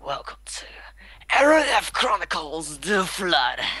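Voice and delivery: whispered, then wide-pitched epic announcer voice.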